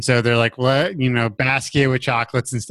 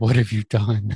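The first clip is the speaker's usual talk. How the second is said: put-on shaky voice, lower, faster; 2 semitones lower than usual. Describing a scene from the show, imitating Pam's shaky voice. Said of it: "just a shaky voice going".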